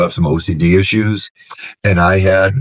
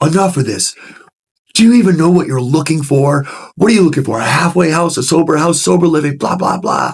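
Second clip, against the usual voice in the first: play-acted, high, fed-up angry yelling, out of patience; 9 semitones higher than usual. Retelling how a man the speaker kept calling finally snapped: retelling an angry yell. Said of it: "and he's yelling".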